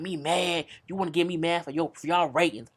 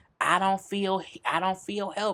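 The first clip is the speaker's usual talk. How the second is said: ordinary delivery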